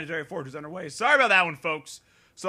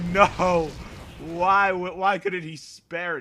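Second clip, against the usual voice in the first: ordinary talk, nothing marked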